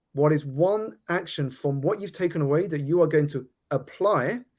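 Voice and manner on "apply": apply drawn out, emphasized, slow and deliberate. Asking what action listeners will apply next week: slow emphasis on apply. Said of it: "I'm slowing down deliberately to emphasize that word apply".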